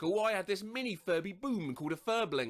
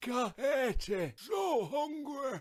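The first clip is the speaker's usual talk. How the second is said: yelled smoker voice, higher, much slower; 5 semitones higher than usual. Recalling the toy yelling in the night, voicing Furby in a forty-year-old chain smoker's voice. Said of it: "yell in a forty-year-old chain smoker's voice".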